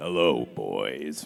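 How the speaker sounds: very deep, loud, drawn-out voice. Redoing a favorite line deeper when asked, in a Frog King voice. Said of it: "That's like the Frog King version".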